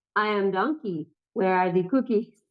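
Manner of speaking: synthesized, robotic text-to-speech computer voice. Speaker imagines Donkey at the door on the doorbell camera, Donkey's text-to-speech voice. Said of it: "he'd be like in his text to speech voice".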